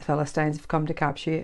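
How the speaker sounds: ordinary delivery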